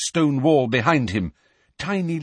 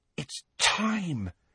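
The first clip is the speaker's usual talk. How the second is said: very quiet, hushed, awestruck murmur; 4 semitones higher, 9 dB quieter than usual. Reading the story, Hermione watches a head regrow hair; awestruck. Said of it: "said Hermione in an awestruck voice".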